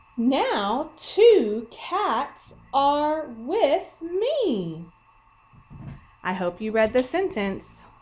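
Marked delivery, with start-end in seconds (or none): 0.2-4.9 very slow, exclamatory reading with strong feeling. Speaker reads a sentence ending in an exclamation point to viewers, reading with strong feeling. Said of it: "this sentence with strong feeling with me".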